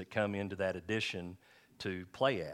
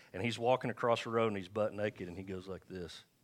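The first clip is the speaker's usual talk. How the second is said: usual speaking voice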